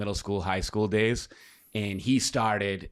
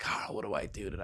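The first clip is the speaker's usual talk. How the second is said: crying, tearful, breathy, half-whispered voice; 8 dB quieter than usual. Retelling calling a friend for help: imitating own past crying.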